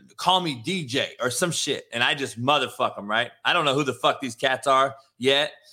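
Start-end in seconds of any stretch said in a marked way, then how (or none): none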